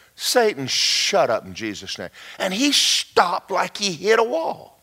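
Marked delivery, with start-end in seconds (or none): 0.2-2.1 very low mutter under the breath. Retelling quietly telling off a boss who was ranting: imitating own muttering under breath. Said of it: "walked over under my breath and I said".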